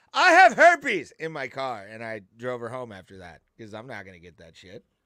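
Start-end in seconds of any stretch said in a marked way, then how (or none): 0.2-1.2 sudden, shrill, high-pitched, loud blurted shriek. Retelling what a woman suddenly blurted out in the speaker's car, imitating her yelling. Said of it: "And she just yells".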